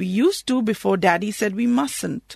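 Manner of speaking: ordinary delivery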